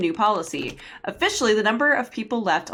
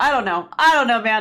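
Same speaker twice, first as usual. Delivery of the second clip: ordinary delivery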